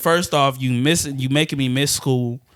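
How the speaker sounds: ordinary talk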